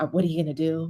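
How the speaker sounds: put-on whisper. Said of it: "you see him whispering to LeBron courtside".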